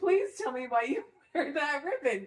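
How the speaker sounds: high, begging, pleading voice. Jim, on his wedding night, asks his new wife a question, begging. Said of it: "Jim begged".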